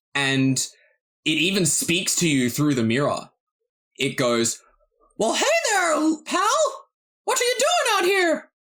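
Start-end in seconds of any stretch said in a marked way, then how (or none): 5.1-8.4 very high, little cartoon-mouse voice. Narrating a cloud creature speaking through a mirror, Mickey Mouse voice. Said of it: "I'm just doing the Mickey Mouse voice".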